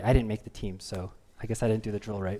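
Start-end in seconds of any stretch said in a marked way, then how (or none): none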